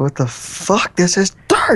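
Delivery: high-pitched, rising outburst, losing control. Recording an episode with a co-host who says to calm down: freaking out. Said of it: "You're just freaking out on me".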